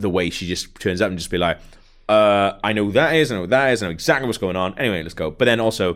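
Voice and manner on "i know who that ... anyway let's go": normal talking voice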